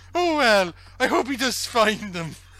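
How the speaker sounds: put-on high, chatty Welsh accent. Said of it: "Such a good Welsh accent".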